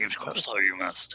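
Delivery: soft, whispered voice.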